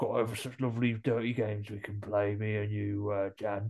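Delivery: creepy voice of a possessed man. Retelling what a man says to jan, in a possessed voice. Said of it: "He's got a possessed voice, so he's going".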